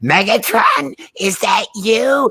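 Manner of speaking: very high screech with big pitch swoops. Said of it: "the high-pitched, like, scree of Starscream".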